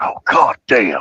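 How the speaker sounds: muttered cursing under the breath. Telling a childhood story, quoting his reaction to a fart, retelling a muttered curse. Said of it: "under his breath".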